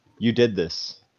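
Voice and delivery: quiet mutter under the breath. A character says this quietly enough that only Arilla hears it. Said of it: "I'm gonna say it quietly enough so that just Arilla hears it".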